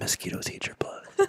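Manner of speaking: very quiet, close whisper. Retelling how he walks up quietly into the room: imitating a whisper. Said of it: "whisper into your ear".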